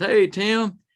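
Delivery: calling out loudly. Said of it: "And he goes".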